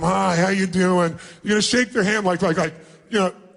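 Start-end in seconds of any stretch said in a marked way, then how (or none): 0.0-1.2 slow, bored, dismissive, couldn't-care-less delivery. Showing how to greet someone as if it wastes your time: acting bored and dismissive. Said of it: "walk up to them like it's a total waste of your time".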